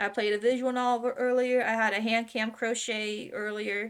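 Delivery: ordinary delivery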